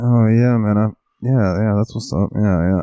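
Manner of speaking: put-on mumble with words pushed through clenched teeth. Showing how speech sounds when really tired: imitating talking without moving teeth. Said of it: "I don't move my teeth when I talk".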